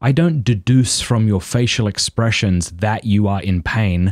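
ordinary talk

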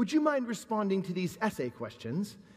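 put-on sudden, sing-song English accent, read aloud. A speaker reads aloud an old email from Debbie Lee: Debbie Lee in an English accent. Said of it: "I don't know why I gave you an English accent".

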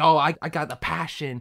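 high, animated-film cartoon koala character voice. Comparing an animated koala to Bob the Tomato, doing the koala's high voice. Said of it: "his voice is kind of high".

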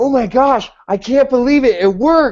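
mock excitement, high, bubbling-over gush. Remembering calling when the plan worked, retelling being all excited. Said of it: "all excited".

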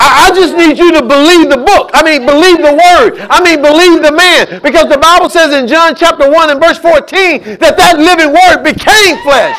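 getting fired up, excitement building, carried away. Quoting the Bible to listeners, the speaker is getting excited. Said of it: "I'm getting excited".

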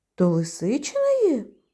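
nearly fainting with fear. Narrator reads the hare reacting to a note sending him to the fox's den, terrified. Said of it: "Зайчик ледве не зомлів".

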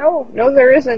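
high, frightened, whimpering voice. A man with a dagger point against him answers, whimpering. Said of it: "He whimpers and shakes his head rapidly".

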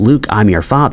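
ordinary talk, nothing marked

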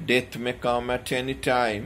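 plain

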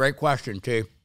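talking with mouth full. Answering a question about power snatching, talking with mouth full. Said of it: "Sorry, I just stuffed my mouth".

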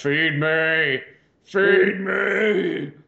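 me drawn out, loud and high-pitched. Joking that a broken heater acts like the Little Shop of Horrors plant: Little Shop of Horrors plant voice. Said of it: "like the plant on fucking, like, Little Shop of Horrors".

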